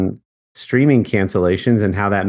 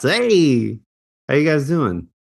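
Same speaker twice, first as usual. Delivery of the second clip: baseball announcer voice, higher; 6 semitones higher than usual. Greeting the other two on the podcast in a baseball announcer voice. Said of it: "I haven't done the baseball announcer voice".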